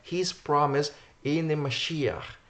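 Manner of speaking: stress on promise. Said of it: "I wanna emphasize".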